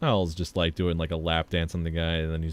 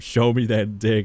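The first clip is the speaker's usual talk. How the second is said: loud hollered yell; 4 semitones higher, 6 dB louder than usual. Describing a scene where the girlfriend yells at him, imitating a woman yelling. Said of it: "she just like yells at him".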